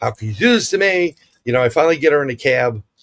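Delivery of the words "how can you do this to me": play-acted high, angry cursing outburst. Retelling cursing at a broken-down car: retelling angry cursing. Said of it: "I'm cursing it".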